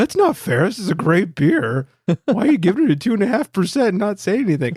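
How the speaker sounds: put-on high, puppet-like children's TV character voice. Retelling a reaction to a low beer rating, in a Sesame Street character voice. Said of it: "now I sound like a Sesame Street character".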